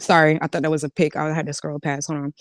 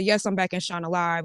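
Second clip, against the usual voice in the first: normal talking voice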